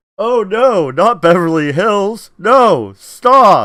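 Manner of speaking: heavy sarcasm. Imagining beverly hills people reacting to riots coming closer: imitating a sarcastic reaction. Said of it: "I can just imagine it being that sarcastic too".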